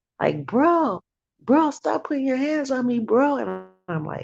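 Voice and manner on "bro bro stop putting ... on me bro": very high-pitched screaming and yelling. Retelling what a neighbor yelled through a door: imitating someone screaming. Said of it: "she was screaming and yelling".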